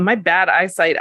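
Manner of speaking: ordinary delivery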